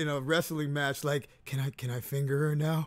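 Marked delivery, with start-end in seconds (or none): 1.5-2.9 mock whisper, acted out. Acting out a hypothetical question to a girlfriend: acted-out whisper like a wrestling referee. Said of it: "whispering to my girl like a referee".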